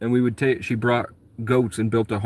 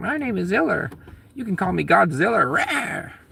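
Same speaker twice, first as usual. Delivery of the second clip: put-on little woman's voice, much higher; 9 semitones higher than usual. Retelling how Ziller introduced herself, little voice, imitating Ziller. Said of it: "she has a little voice".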